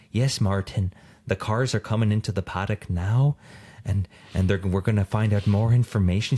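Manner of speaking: timid, careful, treading-carefully tone. Describing how a woman talks: imitating a very quiet voice. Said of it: "She's like very quiet about it".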